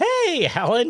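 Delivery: acted-out bright, happy voice, very high pitch. Retelling a race where a fellow runner passed and greeted: happy imitation of Lily. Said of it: "She's all happy, like she just started the race".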